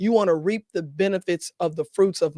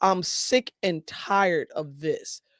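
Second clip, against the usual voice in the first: normal talking voice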